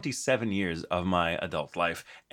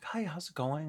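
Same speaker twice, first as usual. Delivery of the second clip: silky nice-guy voice, much higher, quieter; 8 semitones higher, 7 dB quieter than usual. Showing how they first greet customer service, very silky nice-guy voice. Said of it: "I start my very silky, nice guy voice".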